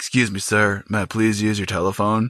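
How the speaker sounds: put-on very polite delivery. Retelling a movie robber's line: imitating a very polite robber. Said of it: "very polite about it".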